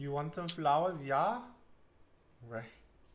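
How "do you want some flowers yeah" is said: playful put-on Swedish accent. Discussing a european look, the speaker tries out a swedish accent. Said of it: "Swedish accent".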